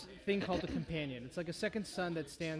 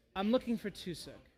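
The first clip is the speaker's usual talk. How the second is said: put-on young woman's voice; 3 semitones higher, 3 dB louder than usual. A game master voices a figure waiting for the party, younger female voice. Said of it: "you hear a younger female voice say".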